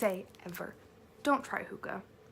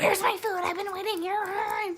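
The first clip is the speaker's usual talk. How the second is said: shrill, very high, angry screaming; 11 semitones higher, 7 dB louder than usual. Recounting a man screaming at the wait staff, retelling a scream. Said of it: "he just starts screaming at the wait staff".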